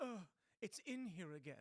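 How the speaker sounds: slow, put-on British or North Atlantic accent. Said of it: "a British or North Atlantic accent like that".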